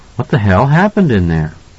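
plain reading voice

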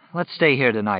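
plain

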